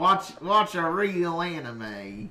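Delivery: put-on, really strong southern accent. Joking about anime, the speaker repeats a line in a really southern voice. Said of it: "talking about anime in a really southern voice".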